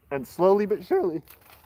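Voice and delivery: cracking, breaking voice mid-phrase. Listing the steps of his plan, speaker's voice keeps cracking. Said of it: "I keep having my voice crack like I'm fourteen years old".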